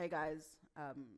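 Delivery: awkward, nervous, stiff delivery. Speaker showing how nervous people greet an audience on stage, nervous and stiff. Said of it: "now you think I want to fight you".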